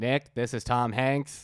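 put-on Boston accent. Speaker pretends a famous actor has called in, doing a JFK impression. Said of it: "That's a JFK".

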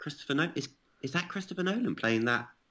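high, hushed, murmuring stage whisper. Retelling what everyone else was half-whispering: imitating people half-whispering. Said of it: "everyone else was sort of whispering".

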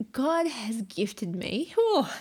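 overcome, swooping voice, on the verge of tears. Interviewee asked about their marriage, emotional, near tears. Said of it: "I'm very emotional".

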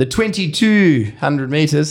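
put-on South African accent. A host previewing the Perth Cup, slipping into a Tony Greig impression. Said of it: "I just sounded South African".

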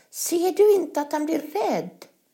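very high-pitched, upset outcry. As another girl tickles a reindeer with her knife, a girl is exclaiming. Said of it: "utropade Gerda".

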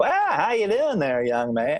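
high, bouncy, sing-song sitcom-style voice. Showing fans a quick Andy Griffith Show impression: Barney Fife impression. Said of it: "a Andy Griffith Show impression of, uh, Barney Fife".

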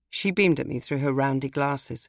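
ordinary delivery

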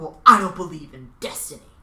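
put-on lofty, superior, haughty tone, loud. Sharing a quote of the week, acting out a character's reply, mock-haughty. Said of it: "Jack says here very haughtily".

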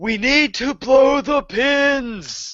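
shrill, very high, very slow, drawn-out yell. Declaring a character action in combat: yelling. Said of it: "I'm gonna yell".

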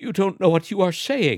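unsteady, uneven delivery. An old man answers his wife after lighting a candle, speaking unsteadily. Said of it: "he said unsteadily".

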